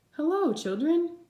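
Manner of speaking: sweet, kindly voice. Narrator reads Miss Nelson greeting the children on her return, sweet voice. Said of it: "someone said in a sweet voice".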